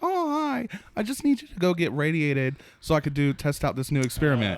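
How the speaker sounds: sugary-sweet, kind, laid-on niceness. Retelling what a game character asks, imitating Moira, real nice and kind. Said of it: "all real nice and kind".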